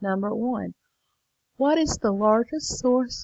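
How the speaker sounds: words stretched out through a yawn mid-sentence. Speaker reads a chart question aloud to learners, yawning. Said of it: "sorry, I'm yawning".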